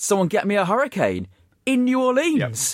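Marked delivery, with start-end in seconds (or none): 0.0-1.3 put-on, raised, called-out shouting voice. Retelling a commentator's line as a bar arrives: imitating someone shouting. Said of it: "Graves shouts".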